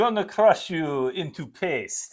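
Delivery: put-on Russian accent. During gameplay banter with a co-player, russian accent. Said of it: "that's a Russian accent".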